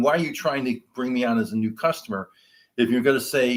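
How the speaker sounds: normal talking voice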